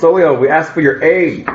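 shouting. Narrating Tyrus jumping in front and calling for aid: yelling. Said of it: "And he yells".

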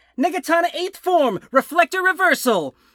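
high, full-lungs yell at the top of the lungs. Describing a character charging with a sword, yelling at top of lungs. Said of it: "yelling at the top of his lungs".

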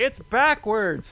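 shrill scream, blurted out, very high. Retelling how a lady screamed out about the speaker's Twitter name: retelling a lady screaming. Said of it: "this lady screams out".

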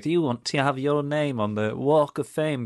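put-on a try at Scouse accent. Mocking the marketing emails from Liverpool Football Club, in an attempted Scouse accent. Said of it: "I know that's not a Scouse accent".

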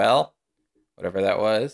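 ordinary delivery

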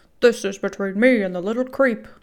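rough man's shouting. Narrator reading the boy's attacker threatening the woman, gruff male shout. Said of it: "shouted the gruff male voice".

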